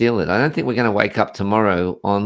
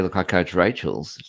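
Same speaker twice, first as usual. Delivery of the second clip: usual speaking voice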